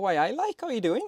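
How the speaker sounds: rough, bad put-on Geordie accent attempt. Imitating a mate from Newcastle answering the phone, in a bad Geordie accent. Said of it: "which were a terrible way of accent".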